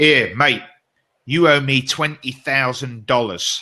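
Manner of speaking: put-on very strong, broad, thick Australian accent. Retelling what a man said to him by the golf buggy, strongest australian accent. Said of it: "with the strongest Australian accent".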